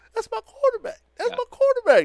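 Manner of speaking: very high, crying voice. Defending his quarterback after the other speaker calls him old, in T.O. crying voice. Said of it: "In T.O. crying voice".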